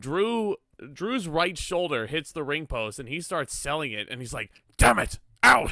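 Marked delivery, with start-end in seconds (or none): 4.8-5.7 put-on loud, raspy, very high cry in a Scottish accent. Acting out Drew McIntyre after his shoulder hits the ring post, in a raspy Scottish Drew McIntyre voice. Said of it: "in this big old raspy Scottish voice".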